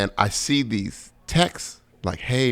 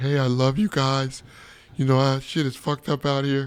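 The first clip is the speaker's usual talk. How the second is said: mock tearful speech, bawling, crying; 4 semitones higher than usual. Retelling breaking down on stage in front of the crowd: retelling own crying speech. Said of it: "I just started crying like".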